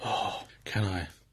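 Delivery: creepy, low, hushed whisper.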